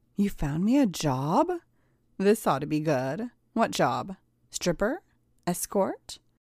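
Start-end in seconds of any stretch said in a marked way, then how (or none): none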